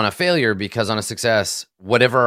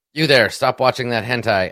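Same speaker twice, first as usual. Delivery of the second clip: usual speaking voice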